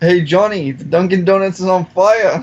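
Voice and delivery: poor, fake attempt at a Boston accent. Asked to do a Boston accent, attempting one anyway, bad Boston accent. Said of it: "The fuck kind of accent was that?".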